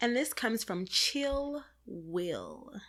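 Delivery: smooth, soft, quiet late-night radio DJ voice. Introducing a listener letter on the podcast, the host names the sender in a quiet storm voice. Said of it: "is this your quiet storm voice?".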